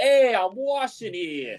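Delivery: thick put-on Brooklyn accent. Demonstrating the voice one has to put on: heavy Brooklyn accent. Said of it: "put on like a like a heavy Brooklyn accent".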